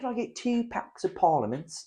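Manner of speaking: put-on British accent. Imitating a customer ordering cigarettes: imitating a cliche British accent. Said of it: "a very cliche British accent".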